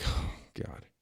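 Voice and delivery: breathy, whispered sigh full of disdain. Retelling a press secretary being called on to answer: Jean-Pierre sighing with disdain. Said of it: "you can just see the disdain in her face".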